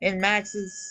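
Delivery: ordinary delivery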